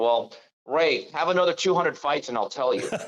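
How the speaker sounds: dry, flat, expressionless deadpan reply. Telling a boxing story, quoting a matchmaker's answer to a fighter: retelling a deadpan reply. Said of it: "just looked at him and deadpan".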